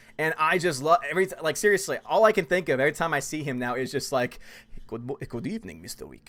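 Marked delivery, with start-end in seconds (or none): 4.9-6.3 put-on courteous, polite hotel concierge-style accent. Imitating the Continental front desk character greeting John Wick: imitating the Continental concierge's accent. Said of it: "just having that accent".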